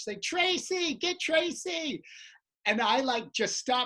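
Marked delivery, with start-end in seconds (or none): 0.2-2.0 mock high, insistent, nonstop demanding holler. Retelling a lady shouting from the back of the room: imitating a lady yelling. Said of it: "'cause she won't stop".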